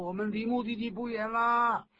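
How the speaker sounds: upbeat, encouraging cheering.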